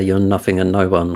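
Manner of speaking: ordinary talk, nothing marked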